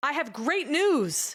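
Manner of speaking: high, very slow, drawn-out, overjoyed and thrilled. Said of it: "Imagine hearing this".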